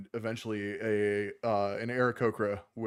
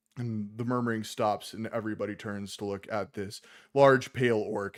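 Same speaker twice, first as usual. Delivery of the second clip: plain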